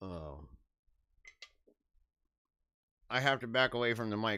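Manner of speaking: talking with mouth full. Speaker at the mic takes a mouthful of sweet potato casserole, talking with mouth full. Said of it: "I can hear myself chewing right now".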